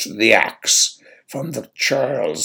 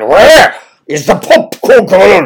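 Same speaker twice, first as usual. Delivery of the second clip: angry tone, higher pitch and louder; 9 semitones higher, 13 dB louder than usual. In a story, an angry churl strides into the hall and addresses those inside: angry demand. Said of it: "he demanded".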